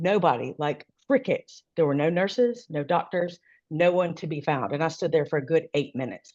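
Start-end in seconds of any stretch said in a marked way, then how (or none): none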